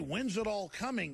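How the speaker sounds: usual speaking voice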